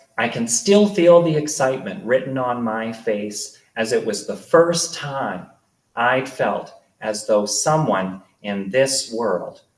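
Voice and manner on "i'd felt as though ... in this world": ordinary delivery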